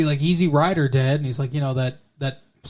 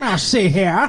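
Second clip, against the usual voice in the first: mobster voice in 1940s movie style; 5 semitones higher than usual. Explaining the sound of the laugh, in Edward G. Robinson voice. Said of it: "like Edward G. Robinson in a, like, nineteen forties gangster".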